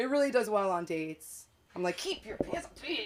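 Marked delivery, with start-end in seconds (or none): 2.0-3.1 whispered, scolding schoolteacher voice. Speaker, who works with kids, shows how they talk on dates: teacher voice. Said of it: "I have like a teacher voice".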